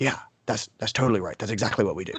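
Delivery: soft, low, murmuring of a group.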